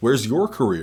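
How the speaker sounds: ordinary delivery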